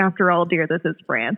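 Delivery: plain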